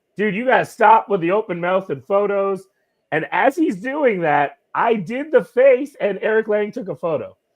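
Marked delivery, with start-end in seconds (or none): 0.2-2.7 yell, pitched higher. Retelling how someone at Gen Con yelled at him: imitating someone yelling. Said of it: "David starts yelling at me about".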